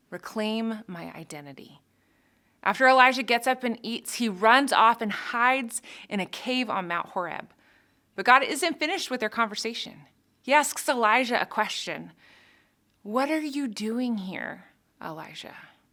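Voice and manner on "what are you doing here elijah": tender, loving, gently questioning tone tinged with frustration. The speaker retells God asking Elijah in the cave, voicing God tenderly. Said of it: "I hear so much tenderness in God's voice there".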